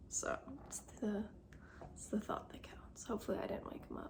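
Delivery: soft whisper. Speaker talking early in the morning while her husband sleeps downstairs, soft whisper. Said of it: "I'm whispering now though, sort of".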